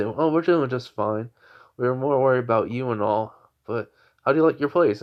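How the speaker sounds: ordinary delivery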